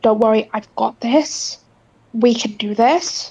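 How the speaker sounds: hushed character whisper. Playing Piper, coming up behind Sonata, whisper to her. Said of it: "just whispers to Sonata".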